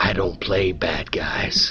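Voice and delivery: low, slow, drawn-out husky near-whisper. Retelling what a man said as he leaned in chewing a cigarette, imitating a husky voice. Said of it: "with that husky voice".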